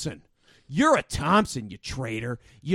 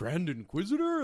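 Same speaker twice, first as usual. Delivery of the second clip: excited, eager, delighted calling out; 5 dB quieter than usual. Retelling a scene where a character greets the Grand Inquisitor: imitating Fifth Brother, excited. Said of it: "he's excited to see him or something".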